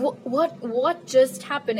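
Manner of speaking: ordinary talk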